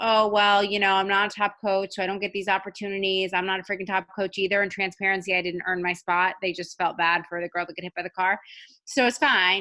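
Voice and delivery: ordinary delivery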